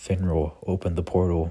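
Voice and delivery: ordinary talk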